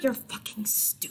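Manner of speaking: muttering under the breath. Telling what a character says during a fight, muttering under breath. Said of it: "That's what she says under her breath".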